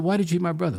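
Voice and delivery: squeaky, demanding, confronting voice. Retelling confronting a man in a pool hall while everyone laughed; squeaky voice. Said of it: "my voice was squeaky".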